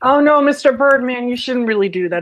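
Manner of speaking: put-on high-pitched, loud childish voice.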